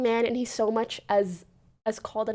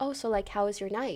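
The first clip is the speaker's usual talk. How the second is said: gentle, non-confrontational tone, quieter; 2 semitones lower, 9 dB quieter than usual. Retelling how the fiancée brought it up: imitating a non-confrontational question. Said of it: "in a really non-confrontational way".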